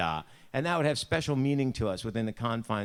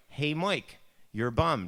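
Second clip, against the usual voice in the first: put-on higher-pitched Buffalo accent; 4 semitones higher than usual. Showing how mom would talk: imitating mom's Buffalo accent. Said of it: "That's just our accent".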